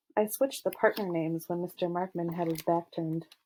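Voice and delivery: plain reading voice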